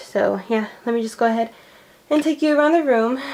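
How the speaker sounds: loud, winded, short of breath. Starting a room tour for viewers, out of breath. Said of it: "I am out of breath".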